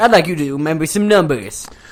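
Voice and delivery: mock monster truck announcer voice. Retelling the announcer's lines at the monster trucks: imitating a strong Sunday-Sunday-Sunday announcer voice. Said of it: "he's like".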